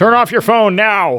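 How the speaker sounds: mock commanding loud voice. Describing a grumpy moviegoer ordering someone in the theater, imitating a loud command.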